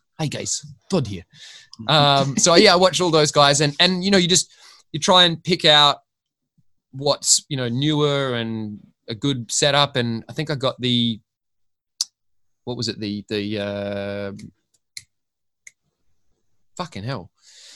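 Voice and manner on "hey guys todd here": gentle Scottish voice. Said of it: "understood his accent".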